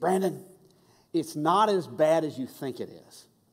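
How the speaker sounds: put-on little grandmotherly lecturing tone. Recalling how Grandma reassured him about a disaster, imitating her grandmotherly lecturing tone. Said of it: "that little grandmotherly, lectury tone".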